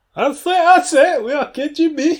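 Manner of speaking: very high, loud, blustery rooster voice. Joking with another speaker about Norilsk and the KGB, in a Foghorn Leghorn voice. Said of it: "This is going to be the new Foggle on Leghorn".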